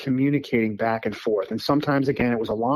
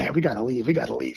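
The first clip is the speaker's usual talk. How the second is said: put-on nervous voice. Retelling a son urging to leave the woods: imitating a nervous son. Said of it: "he just got really nervous".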